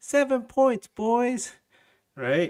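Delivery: very high, all-happy, naive sing-song voice. Voicing a naive, bright-eyed fan's prediction in a mock-happy voice. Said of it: "With that voice and everything. ... like that, all happy".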